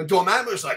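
ordinary delivery

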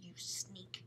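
hushed, soft whisper under the breath. At breakfast, to his sister who just told on him; whispered. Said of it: "John whispered".

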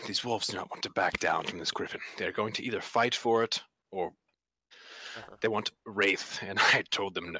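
low, hushed half-whisper. A player half-whispers to a character so the wolves cannot hear, half-whispering. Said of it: "this is a whisper".

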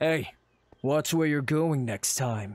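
low, forced gruff voice, almost put-on. Narrating a story, a stranger you ran into scolds you, in a low gruff voice. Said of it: "speak to you in a low and gruff voice".

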